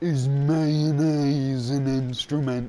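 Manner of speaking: dim-sounding, dopey cartoon character voice. Quoting a cartoon line after being told to say it like that; Patrick Star voice. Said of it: "You gotta say it like that as well".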